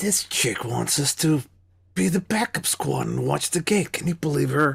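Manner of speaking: voiced, in-character stage half-whisper. Playing a character who leans to Jill as she sits down: in-character half-whisper. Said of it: "I'll whisper to, to her".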